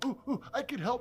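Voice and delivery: high, eager, excited goblin squeal.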